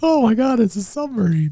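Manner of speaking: put-on very high, rushed, giddy little-kid excitement. Retelling a player's line about the submarine like a little kid. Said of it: "He's like a little kid".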